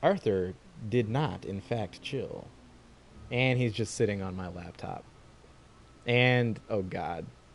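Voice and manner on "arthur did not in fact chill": storybook storyteller narrator voice. A speaker comments on their cat sitting on the keyboard, narrator voice. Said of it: "Narrator voice".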